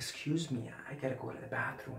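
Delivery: hushed, deeply guilty whisper. Acting out excusing yourself from a meeting to go to the bathroom, in a very guilty tone. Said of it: "with a very guilty uh, tone of, of voice".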